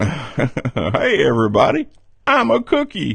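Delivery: bouncy, lively cartoon dog voice. Recalling an earlier bit where Goofy narrated something, speak in a Goofy voice. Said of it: "I was doing a Goofy voice".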